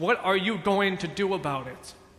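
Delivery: ordinary talk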